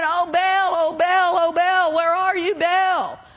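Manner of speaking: mock hollering, screaming. Acting out the prophets calling out to their god, mock hollering. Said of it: "They were screaming. They were hollering".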